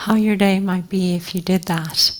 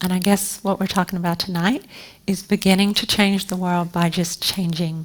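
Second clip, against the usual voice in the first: normal talking voice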